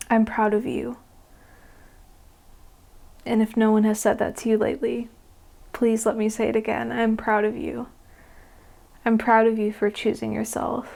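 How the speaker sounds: choked up, emotional, voice catching. Speaking to the listener, getting a little choked up. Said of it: "I'm getting a little choked up here".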